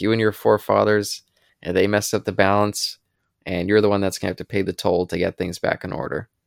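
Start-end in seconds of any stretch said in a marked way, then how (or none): none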